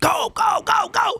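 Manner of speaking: put-on very high, stretched-out drawn-out yell. Telling a story of a coach pushing his student: imitating a coach screaming. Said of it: "screaming at him".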